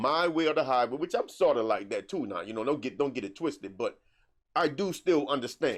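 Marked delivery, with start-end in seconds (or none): none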